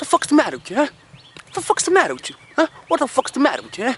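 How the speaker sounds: voice pushed way up high. You are making listeners guess who each impression is; this last one is a Robert De Niro impression. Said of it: "That's Robert De Niro".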